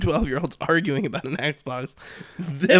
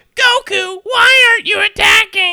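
put-on shrieking child voice, much higher and louder; 8 dB louder than usual. Retelling a 12-year-old yelling at her in game voice chat, shrieking child voice. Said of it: "12-year-old child shrieking".

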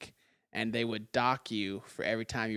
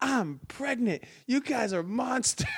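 mock very high-pitched, shrill, sharp shouting; 13 semitones higher than usual. Recalling a teacher who fell while the kids laughed, imitating a teacher yelling. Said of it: "My teacher just started yelling at us".

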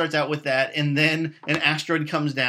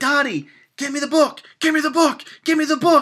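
very high, all-out, top-of-lungs yell; 11 semitones higher, 6 dB louder than usual. Speaker acts out a man in the movie Armageddon; retelling a top-of-lungs yell. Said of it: "he's yelling at the top of his lungs".

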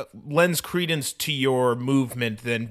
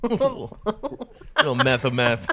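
put-on lisping voice; 2 semitones higher than usual. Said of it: "my husband has a lisp".

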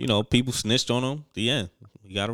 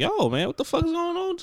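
very high incredulous outcry. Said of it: "everybody was like".

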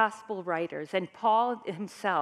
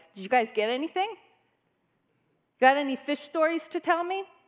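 put-on, light, pitched-up teasing tone; 6 semitones higher than usual. Retelling a man on the shore mocking the fishermen: imitating Jesus teasing. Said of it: "he's kind of mocking them a little bit".

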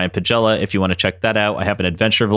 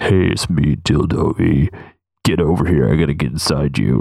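put-on character voice, dropped very low; 6 semitones lower than usual. Joking about a talking toy character, speaking in a very low voice. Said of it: "he was a very low voice".

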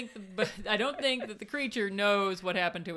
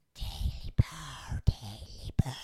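creepy creature voice, lower pitch; 7 semitones lower than usual. Showing the creepiest way to say the creature's line: creepy Gollum-like voice. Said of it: "what's the creepiest way you could say that?".

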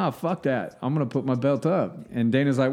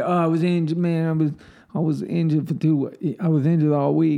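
speaking with a lisp; 3 semitones higher than usual. Quoting a fighter's excuses after a loss: Nate Diaz impression with a lisp. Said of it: "sometimes I can pull Nate off really good".

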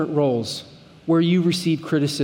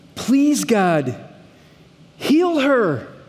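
emphatic, slow, pitched-up, desperate imploring tone; 5 semitones higher than usual. Reading Moses's prayer from verse thirteen: imitating an emphatic plea to God. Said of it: "pleading with God in a begging sort of way".

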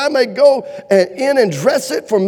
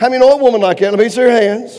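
ordinary talk, nothing marked

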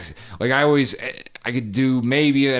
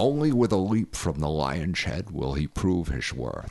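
put-on Scottish accent, lower and quieter; 6 semitones lower, 6 dB quieter than usual. Answering a request to do a Sean Connery: Sean Connery impression. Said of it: "Can you do a Sean Connery?".

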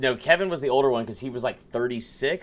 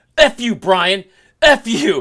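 put-on angry, combative voice, higher and louder; 9 semitones higher, 12 dB louder than usual. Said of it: "they're fighting back and forth".

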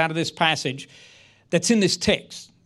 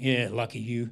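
very low, muttered, sarcastic put-down; 7 semitones lower, 7 dB quieter than usual. Retelling a retired gym classmate's reply, imitating a sarcastic reply. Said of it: "which he replied with sarcasm".

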